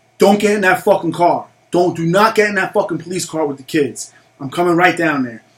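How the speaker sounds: mock-angry, acted-out pissed-off voice. Retelling what the speaker told her while police took the truck, retelling angry words. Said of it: "So now I'm even more pissed".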